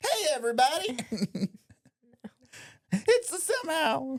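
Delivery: drawn-out, slow, very high-pitched. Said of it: "Do you wanna try that higher?".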